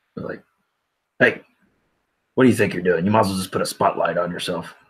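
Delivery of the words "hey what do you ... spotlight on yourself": sudden call meant to startle. Dropping in behind a boy in character, trying to scare someone. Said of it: "just kinda get him a little scared".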